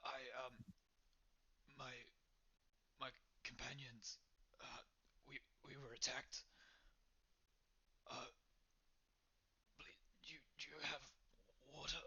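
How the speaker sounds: breathing heavily. A narrator voices a man who falls to his knees as the group approaches, heavy breathing. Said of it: "in a very heavy breath".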